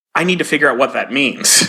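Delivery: ordinary talk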